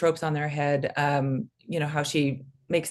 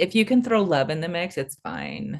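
sarcastic tone, pitch swinging widely, sing-song; 2 semitones higher than usual. Commenting on abusive love in a story: sarcastic. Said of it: "that was sarcasm".

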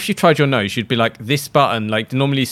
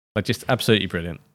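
ordinary talk

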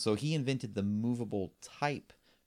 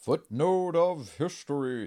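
higher, raised, loud called-out voice; 6 semitones higher, 6 dB louder than usual. Repeating the segment title just announced: Devon impression. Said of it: "that was my best Devon impress-".

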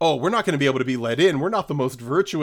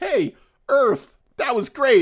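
put-on earnest tone, pitched higher; 10 semitones higher, 4 dB louder than usual. Retelling a movie scene's speech to Earth: imitating an earnest speech. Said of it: "a very funny and earnest speech".

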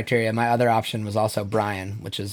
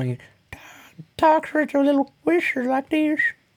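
very high, lisped cartoon voice. Explaining the choice of Herbert from Family Guy, Herbert voice with a lisp. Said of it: "It's my best move at it. I couldn't quite get my voice there".

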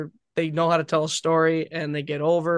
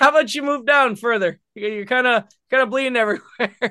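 friendly, light voice, pitched a little high; 7 semitones higher, 4 dB louder than usual. Retelling a wrestler asking him to move down, imitating Swoggle with a big grin. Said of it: "Swoggle has this big grin and goes".

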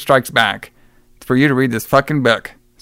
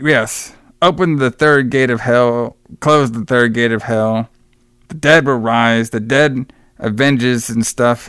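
usual speaking voice

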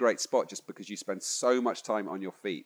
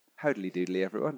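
put-on very British voice. Trying out a new greeting to everyone: put-on really British voice. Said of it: "maybe something really British".

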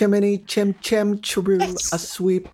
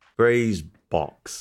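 put-on bad English accent, lower pitch; 9 semitones lower than usual. Trying to say the word like the English players: Mary Poppins-style cockney attempt. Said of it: "How did that viewing of Mary Poppins go".

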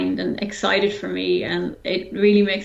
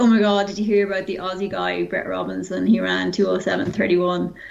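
normal talking voice

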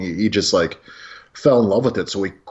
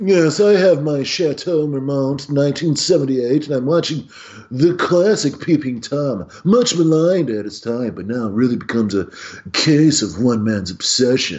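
put-on snooty, haughty voice, much higher; 5 semitones higher than usual. Doing a joke ad read in a snooty voice. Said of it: "let's also do ads in our Snooty voices".

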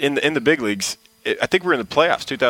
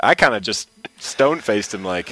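usual speaking voice

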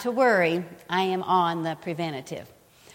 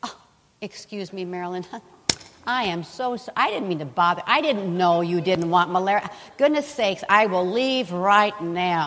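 mock fawning politeness, apologetic, backing down. Mocking what the devil will never say when rebuked: mock-polite apologetic devil. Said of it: "the devil's not gonna say".

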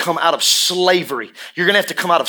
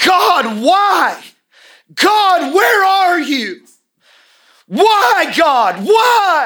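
very high, slow, shrill drawn-out screaming; 13 semitones higher, 5 dB louder than usual. Retelling a woman on a phone crying out to god: imitating someone screaming. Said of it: "I heard her screaming into her phone".

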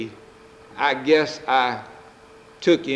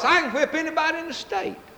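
a notch louder, very high, acted-out boast. Telling of a man boasting ever louder to the bar, retelling a louder boast. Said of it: "in a little louder voice".

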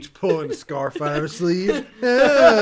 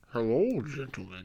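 put-on disguised voice, very low and very quiet; 7 semitones lower, 13 dB quieter than usual. Greeting the king while wearing a mask: disguised voice. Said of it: "I'm disguising my voice".

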